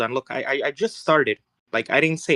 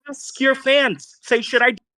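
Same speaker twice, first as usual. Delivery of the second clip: high-pitched shouting and screaming; 11 semitones higher than usual. Urging the other speaker to ask their fans in chat: shouting and screaming. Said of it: "This is why you are shouting and screaming".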